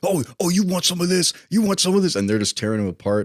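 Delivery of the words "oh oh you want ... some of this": put-on, squeaky, very high-pitched taunting yell. Retelling a movie scene where a character is knocked into an alligator pit: imitating someone yelling. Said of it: "he's yelling at the alligators".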